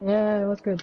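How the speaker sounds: sounding disappointed and let down. Answering a call after crashing out of the race, sounding disappointed. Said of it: "you sound really disappointed".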